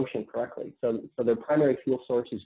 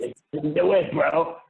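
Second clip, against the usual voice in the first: mock bro talk, higher; 4 semitones higher, 4 dB louder than usual. Mocking what people in the carnivore community say: imitating a carnivore bro. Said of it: "it's bro science".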